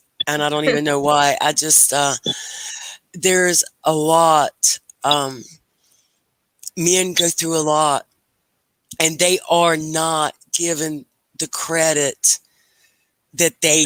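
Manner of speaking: choked-up, tearful voice, close to tears. Talking to a woman about what men go through, tearful. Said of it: "I I'm getting tears".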